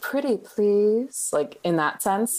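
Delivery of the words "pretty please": high, syrupy, sugary, almost seductive voice. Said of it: "in the sort of like syrupy, almost seductive voice".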